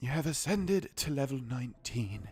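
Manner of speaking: nature documentary narrator voice. Narrating a level-up in a game, David Attenborough voice. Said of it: "I should voice this in a David Attenborough voice".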